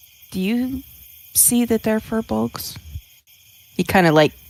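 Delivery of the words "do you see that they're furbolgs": high, hushed, confidential half-whisper. Leaning over to another character to ask a secret question: half-whispering. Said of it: "covers up his mouth a little bit and he's kinda whispering to him".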